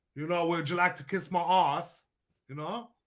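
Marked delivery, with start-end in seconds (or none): 0.5-2.1 put-on English accent. Talking about how people from england speak, imitating an english accent. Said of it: "The England people".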